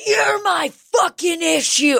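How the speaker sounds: man screaming, very high and drawn out. Retelling a neighbors' argument overheard from next door: imitating a man yelling. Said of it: "what the man yelling was saying".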